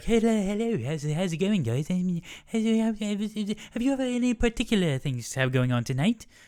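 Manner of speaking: very high, slow, dim-witted, bumbling British accent. Pitching characters to play, the speaker acts out the second: bumbling British detective voice. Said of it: "bumbling British detective idiot who would be like".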